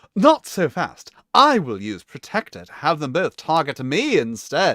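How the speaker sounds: fake British accent, animated. Reading a character's line in the game, switching to put-on British accent. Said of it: "Maybe it would make more sense if I had a British accent".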